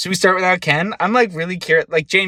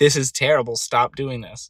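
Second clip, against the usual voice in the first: ordinary talk, nothing marked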